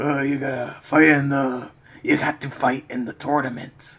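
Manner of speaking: voice full of gravel, ground out. Describing Christopher Lambert playing Raiden, doing his gravelly Raiden voice. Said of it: "he has this like gravelly voice".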